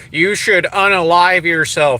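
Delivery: ordinary talk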